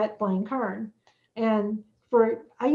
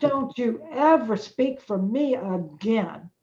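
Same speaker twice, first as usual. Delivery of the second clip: mock upset, angry voice. Retelling a phone call made while really upset: retelling own upset words. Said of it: "when I really got upset".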